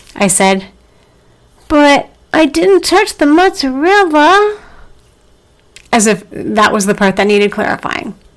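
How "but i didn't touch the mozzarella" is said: put-on small, high, frightened little-kid voice. Retelling a family-legend childhood moment, sure of a spanking, in a put-on scared little voice. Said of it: "I added in a scary little voice".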